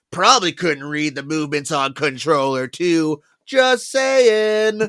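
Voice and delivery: put-on mocking tone. Retelling what the game villain says to the player: imitating a mocking taunt. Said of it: "in, like, a mocking way".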